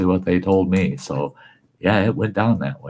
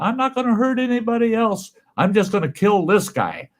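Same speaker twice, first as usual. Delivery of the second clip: shrill, very high-pitched screaming. Speaker recounts what a man was heard screaming, retelling a scream. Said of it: "he was screaming".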